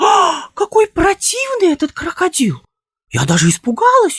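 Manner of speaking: flirtatious, coquettish, very high prattling babble. Reading a story aloud, a lady exclaiming at a crocodile: coquettish babbling. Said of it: "ещё кокетливее пролепетала Елена Ивановна".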